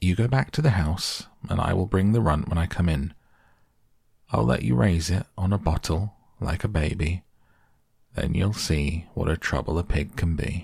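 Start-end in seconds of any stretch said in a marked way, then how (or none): none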